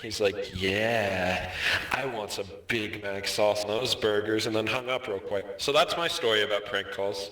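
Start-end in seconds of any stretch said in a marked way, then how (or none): 0.6-4.4 put-on slow, suggestive child voice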